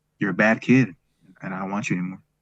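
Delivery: cold, level, stoic voice with no feeling. Retelling what she said while looking at them, retelling a flat, emotionless voice. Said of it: "a stoic voice and with no emotion at all".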